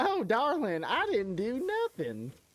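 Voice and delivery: very high, swooping, sing-song southern belle voice. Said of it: "like a [name] voice".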